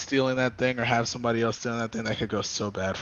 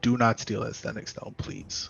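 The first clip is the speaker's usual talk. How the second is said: grave, earnest, very serious near-whisper; 4 dB quieter than usual. Speaking in character to a party member before they split up: very serious. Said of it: "be very serious and say".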